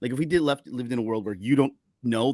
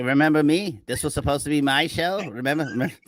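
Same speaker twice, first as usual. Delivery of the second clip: put-on mocking character voice; 3 semitones higher than usual. Speaker acting out a character breaking the fourth wall, mocking Obi-Wan Kenobi voice. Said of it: "It's just like this was like".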